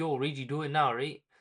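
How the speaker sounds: ordinary talk, nothing marked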